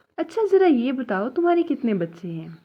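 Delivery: ordinary talk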